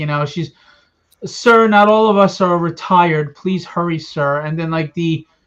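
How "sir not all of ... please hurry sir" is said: dull, droning, sarcastic tone. Describing how a woman in a scene spoke, imitating a droning voice. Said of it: "dro um droning voice".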